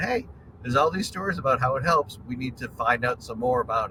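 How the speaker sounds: ordinary delivery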